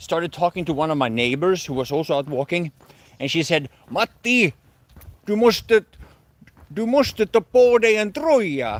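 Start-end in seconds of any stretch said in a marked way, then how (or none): 3.9-8.8 put-on Swedish in heavy Finnish accent, high and slow. Quoting a neighbor out walking who speaks to matti, in swedish with a very finnish accent. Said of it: "that's Swedish in a very Finnish accent".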